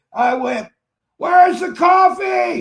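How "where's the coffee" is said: play-acted, high, loud shout. Telling a story about walking in unable to hear, the speaker retells screaming. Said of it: "And I'm screaming because I can't hear".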